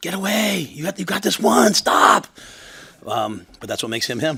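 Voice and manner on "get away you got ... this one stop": very high, very loud, shrill, drawn-out screaming. Retelling cheering in the last round of a fight: imitating own screaming. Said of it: "I was screaming like".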